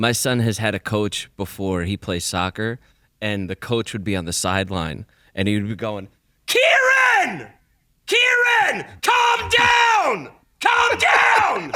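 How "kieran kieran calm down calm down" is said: very high, very slow, swooping, drawn-out scream. Parent retells the son's soccer coach on the sideline: imitating a coach screaming. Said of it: "you're screaming at the top of your lungs".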